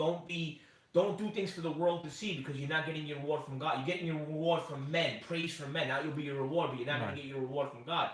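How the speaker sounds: plain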